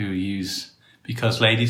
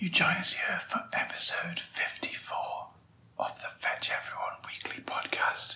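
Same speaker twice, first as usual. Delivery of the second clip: hushed, barely voiced, very soft whisper; 9 semitones higher, 11 dB quieter than usual. Opening the episode while whispering to adjust sound levels: whispering. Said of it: "We're whispering".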